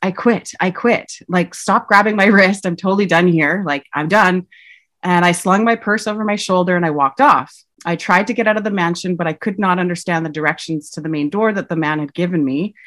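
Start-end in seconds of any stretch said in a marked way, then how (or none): none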